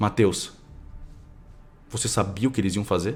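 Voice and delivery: utterly calm, soft voice. Retelling how, after a camera hit the floor, Gabriel spoke to Matheus, imitating Gabriel's very calm voice. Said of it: "só uma voz muito calma é ouvida".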